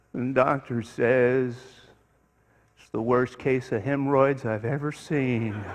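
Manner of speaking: slow, sagging donkey voice. A man in a closing elevator turns to the speaker, in an Eeyore voice. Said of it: "even his best Eeyore voice".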